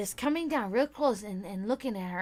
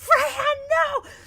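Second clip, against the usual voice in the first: shrill, frantic, very high, loud panicked scream; 8 dB louder than usual. Retelling running across the yard to grab Freya, re-enacting a scream. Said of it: "I'm fucking screaming".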